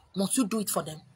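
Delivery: nasty, mean voice. Acting out the inner critic speaking in one's head: nasty inner critic voice. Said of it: "that nasty voice, that inner critic".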